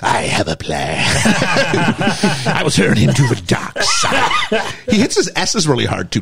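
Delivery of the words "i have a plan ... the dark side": very slow, swooping voice pushed from the belly. Imitating the Emperor after reading about his voice: Palpatine voice from the stomach. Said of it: "let me do it from my stomach".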